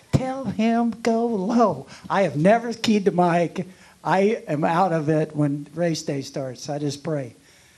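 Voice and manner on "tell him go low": mock screaming, high-pitched and drawn out. Retelling someone screaming at them during a race: retelling a scream. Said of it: "Heather's just screaming at me".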